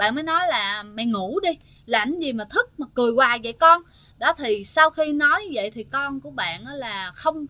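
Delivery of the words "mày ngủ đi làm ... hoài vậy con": usual speaking voice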